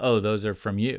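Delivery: put-on snarky delivery. Retelling what a mom said to her four-year-old: imitating a snarky remark. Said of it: "in a snarky way".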